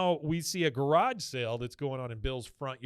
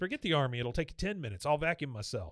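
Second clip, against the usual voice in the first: normal talking voice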